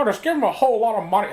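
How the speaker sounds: high voice, muffled as if around a cigar. Acting out studio executives talking about a new comedian: George Lucas voice. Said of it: "I'm just doing George Lucas with a cigar".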